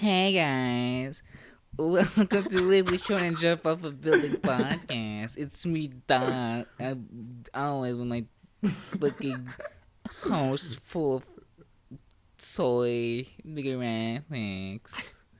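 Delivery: put-on loud, childlike, squeaky little-man voice. Doing a podcast intro in a squeaky childlike voice. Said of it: "I have to make like a child's voice, like a little squeaky man".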